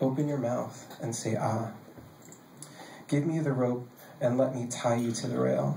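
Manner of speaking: ordinary talk, nothing marked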